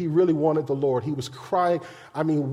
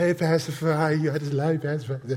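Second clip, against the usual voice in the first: put-on young man voice with no bass. Retelling a young man greeting him on the porch, imitating Corey's voice. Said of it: "that's how Corey talk".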